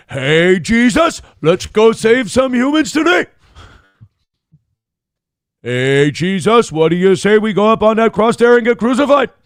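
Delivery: high-pitched, chatty cartoon bear voice. Speaker voices God talking to Jesus; Yogi Bear voice. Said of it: "God is Yogi Bear".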